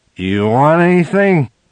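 loud, high, fake drunken voice. The completely sober narrator asks the girl he danced with, in a fake drunken voice. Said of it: "asked her in a drunken voice".

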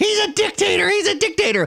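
frantic, shrill scream, pitched very high. Mocking Democrats who are out there screaming: imitating people screaming. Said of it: "they're out there screaming".

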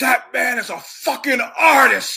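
high-pitched, loud, slow scream.

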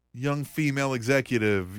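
normal talking voice

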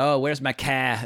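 exaggerated Boston accent. Mocking how Americans fake it, demonstrating an exaggerated Boston accent. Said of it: "all you have to do is drop your Rs and then you sound Bostonian".

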